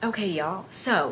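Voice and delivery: soft, hushed half-whisper under the breath. Addressing viewers before moving to a holiday topic, half-whispering. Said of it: "I don't know why I'm whispering".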